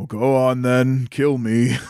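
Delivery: large, resonating voice. Retelling Boon's answer when threatened with a sword, Boon's big deep resonating voice. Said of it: "big, deep, resonating voice".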